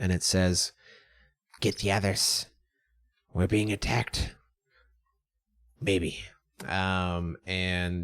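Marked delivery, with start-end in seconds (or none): 1.6-6.2 rat voice, whispered low and hushed. Narrating a game, voicing the rat that was just shot to another rat: whispering rat. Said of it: "It whispers to the other rat".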